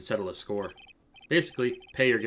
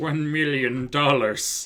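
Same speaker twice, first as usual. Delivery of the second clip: loud, booming villain delivery; 4 semitones higher, 6 dB louder than usual. Recapping a movie scene, admitting he repeated a line in a Doctor Evil voice. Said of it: "in a very like Doctor Evil voice".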